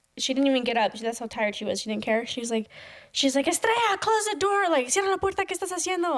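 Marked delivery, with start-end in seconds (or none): 3.5-6.2 high, loud yelling from another room. Retelling how mom yelled from her room: imitating mom yelling. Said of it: "starts yelling at me from her room".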